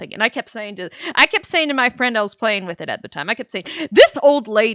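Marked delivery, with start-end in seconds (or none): 3.9-4.8 put-on sarcastic tone, louder. Retelling what was said to a friend while playing: imitating own sarcastic remark.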